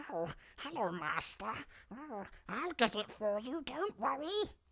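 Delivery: very high-pitched, slow little goblin creature voice. Changing up a character impression, speaking in a little goblin voice. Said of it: "I can do it like a little goblin".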